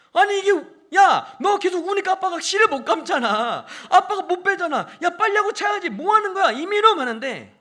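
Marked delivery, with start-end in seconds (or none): 0.1-6.5 put-on furious scolding, very loud, very high. Retelling scolding the crying child while tying the thread: imitating his own angry scolding. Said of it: "막 화가 나는 거예요".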